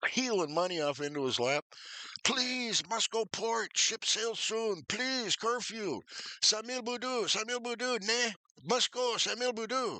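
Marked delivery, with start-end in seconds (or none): 2.2-10.0 play-acted very high, begging, pleading shouted yelling. Retelling pleading with the cab driver: imitating his own yelling. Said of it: "I'm yelling at him".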